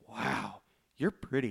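put-on voice of an eight-year-old child. Retelling Shazam meeting Wonder Woman: Shazam like an eight-year-old kid. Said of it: "asking these questions like an eight-year-old kid".

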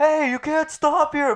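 play-acted, very high-pitched, shrill, loud yell. Retelling what a guy yelled from his car window, imitating his yell. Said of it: "starts yelling".

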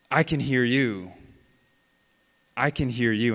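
put-on yelling, called back with punch. Retelling how he answered the rescue worker: imitating someone yelling. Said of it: "And he yells it".

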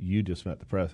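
ordinary delivery

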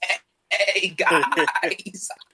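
high, loud, glitchy, busted broken-mic voice. Showing what a broken controller mic would sound like in a party: imitating a broken mic voice. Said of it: "That was a really good impersonation".

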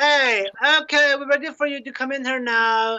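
high-pitched makeup lady character voice. Doing a bit as one of the makeup ladies: impression of a makeup lady. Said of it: "It's an impression of one of the makeup ladies".

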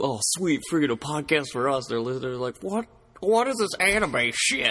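put-on southern Alabama accent. Imagining a listener reacting to the podcast, in a southern Alabama acid-user voice. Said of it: "what regular acid user from, like, southern Alabama did you pick up for that impression".

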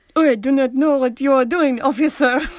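put-on thick French accent. Speaker showing how someone in a dubbed movie speaks english, heavy french accent. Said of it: "speaks English with a really heavy French accent".

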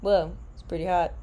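bone-dry, super dry deadpan delivery. Co-host picturing the friend reacting to an actor on tv: imitating a super dry voice. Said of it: "in your like super dry voice".

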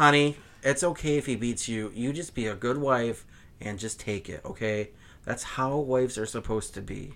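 comforting, caring, reassuring counsellor-style advice-host voice. Mocking a disliked public figure named Delilah: Delilah impression. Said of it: "that's always my impersonation of how".

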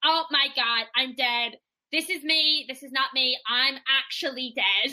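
ordinary talk, nothing marked

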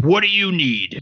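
thick, gruff soldier voice. Trying out voices for a role, attempt a rough, thick soldier's voice. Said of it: "more like a thick soldier's voice".

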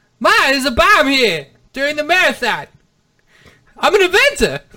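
ever-climbing loud high voice. Acting out the movie scene with the bomb, high-pitched Mark Wahlberg impression. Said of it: "He just keeps getting higher pitched every time".

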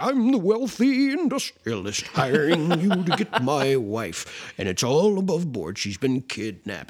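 put-on, hammy mock old man voice.

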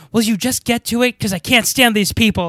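put-on loud stage whisper. Retelling a movie scene where Nora whispers too loudly: imitating Nora's loud whisper. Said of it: "talking so loud that everyone can hear".

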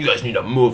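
put-on irritated, angry, bossy man's voice. Retelling what a man at the pregame demanded: imitating an angry man. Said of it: "getting all angry".

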